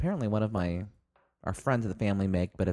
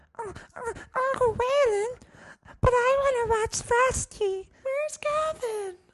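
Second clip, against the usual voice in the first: put-on very high, helium-like small-child voice. Describing a small child, imitating her in a very high soft child voice. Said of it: "incredibly high".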